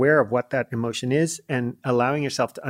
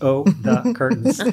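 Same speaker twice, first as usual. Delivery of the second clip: mild, innocent-sounding, innocuous tone; 2 semitones higher, 4 dB louder than usual. Retelling what a wife said at the dining table: imitating wife's tone of voice. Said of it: "She said it pretty much in that tone of voice".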